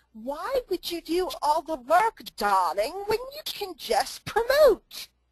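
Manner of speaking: bad English accent, high and swooping. Retelling what a man on the bus said, in a bad English accent as Alan Lorenz. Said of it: "he said to me in his fabulous English accent".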